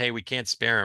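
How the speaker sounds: plain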